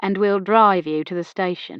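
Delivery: ordinary delivery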